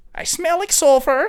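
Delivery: shrill, very loud, high belted cartoon voice. Asked for a sample of a character's voice: Gru from Despicable Me voice. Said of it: "probably something similar to Gru from Despicable Me".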